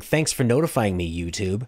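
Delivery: ordinary delivery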